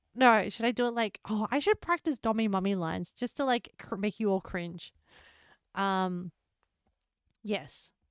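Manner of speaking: ordinary talk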